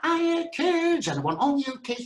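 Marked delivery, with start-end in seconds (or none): 0.0-1.1 very high, loud pantomime-style shout. Retelling a pantomime, telling the kids what will be shouted: retelling a shout. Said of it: "I'm going to shout".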